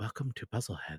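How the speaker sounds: hushed, very soft late-night radio-host voice. Pitching a puzzle-game podcast episode to a co-host: NPR voice. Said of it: "we have to talk in, in, in N P R voices".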